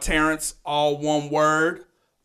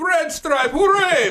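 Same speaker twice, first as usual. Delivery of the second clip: put-on vampire count voice; 13 semitones higher, 5 dB louder than usual. Retelling a line almost said on air: the Count from Sesame Street voice. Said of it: "It sounded like, kinda like Count Chocula".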